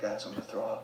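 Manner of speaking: tiny, very hushed little voice. Retelling how Jake suddenly spoke up from his seat, in Jake's quiet little voice. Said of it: "we hear this quiet little voice".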